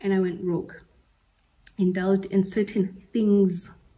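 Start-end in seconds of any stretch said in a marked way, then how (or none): 1.8-3.7 things drawn out slowly with heavy stress. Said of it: "Emphasis on the word things".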